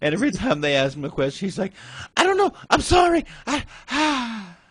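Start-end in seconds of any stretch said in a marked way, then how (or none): 2.2-4.4 very high, frightened, halting, drawn-out voice. Movie reviewer retelling Tom answering questions, imitating Tom's scared high voice. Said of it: "His voice is high pitched the whole time".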